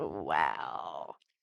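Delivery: low, creaky, stunned voice.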